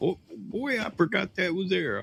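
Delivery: high, soft, rueful, dismayed voice.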